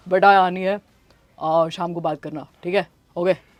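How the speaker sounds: put-on thick man's voice.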